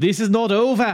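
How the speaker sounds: very high, loud, bad Italian accent slipping into Irish. Quoting what Laura De Mateo says, Laura De Mateo, fake Italian accent. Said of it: "This is my Italian accent, by the way, ... That's just Irish".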